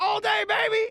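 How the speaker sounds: very high, fake hype-man holler. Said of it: "All I hear is".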